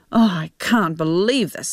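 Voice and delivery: ordinary talk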